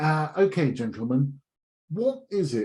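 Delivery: put-on Eton accent. Retelling what a boss asked in a meeting: Eton accent. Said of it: "in his best Eton accent".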